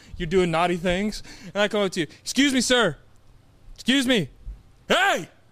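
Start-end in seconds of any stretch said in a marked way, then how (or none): 2.2-5.3 acted shouting, pitched higher. Acting out approaching a street dealer in a role-play: yelling in a role-play. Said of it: "who are you yelling at?".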